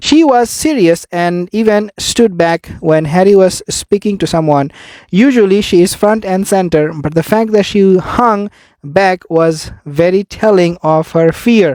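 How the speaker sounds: plain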